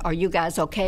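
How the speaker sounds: plain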